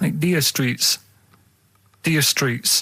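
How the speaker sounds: Jamaican accent and pronunciation. Coaching another speaker on how to say it, Jamaican accent. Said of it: "make it sound like that".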